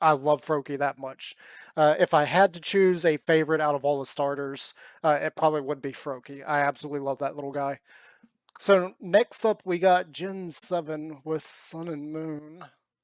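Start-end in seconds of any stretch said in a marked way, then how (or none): 8.6-12.6 slow, deflated, disappointed delivery. Going through game starters by generation, reaching the next one, disappointed voice. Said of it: "Can can you hear the disappointment in my voice?".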